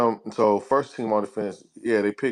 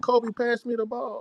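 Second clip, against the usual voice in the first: put-on crying voice, higher pitch; 13 semitones higher, 3 dB quieter than usual. Quoting a basketball player asking a teammate for the ball: imitating Ron Artest, sounding tearful. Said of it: "why you say it like that?".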